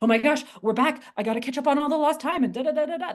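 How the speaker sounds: high, rushed, frantic, rattled-off acted babble. Speaker acts out their own past self returning, with put-on frantic energy. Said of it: "That frantic energy".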